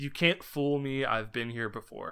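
normal talking voice

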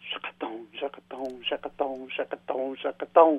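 very hushed, quiet, low, under the breath. Not wanting to wake mom in the next room, speaker says it anyway: very quiet. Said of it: "So I'll say it real quiet".

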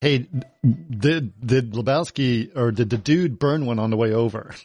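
usual speaking voice

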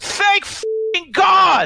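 very high, slow, drawn-out scream. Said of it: "[name] just screams out from the back".

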